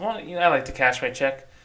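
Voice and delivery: ordinary talk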